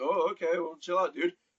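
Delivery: put-on hesitant, unsure voice. Retelling a vendor's reply to an eager order: imitating a hesitant vendor. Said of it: "he kinda had that hesitant".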